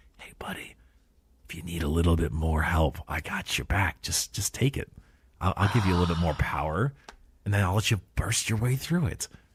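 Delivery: fancy-pants tempting voice, egging on. Retelling a guy half-whispering an offer of power in someone's ear: imitating a guy half-whispering in someone's ear. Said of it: "whispering in his ear is some fancy pantsy guy".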